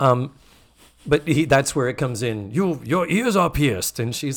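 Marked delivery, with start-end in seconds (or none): 2.5-4.0 bad put-on Japanese accent, much higher pitch. Retelling what a man asked a woman, in a terrible japanese accent. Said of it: "I'm doing a terrible Japanese accent".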